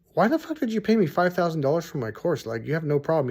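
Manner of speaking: ordinary talk, nothing marked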